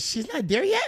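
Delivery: very high, worried mother's voice. Retelling a phone call, imitating the mother's voice. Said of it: "That voice".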